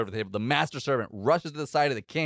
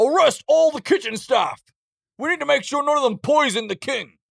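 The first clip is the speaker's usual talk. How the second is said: very high, loud shouted voice; 13 semitones higher, 6 dB louder than usual. Voicing someone behind the players, ordering arrests: yelling. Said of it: "you hear someone yelling".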